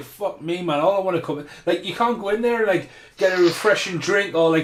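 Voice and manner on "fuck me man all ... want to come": normal talking voice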